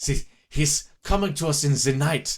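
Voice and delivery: put-on German accent. Describing a man as a vengeful meth ghost, in a mock german accent. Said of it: "I gotta do my best German".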